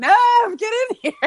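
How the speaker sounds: high, laughing scream.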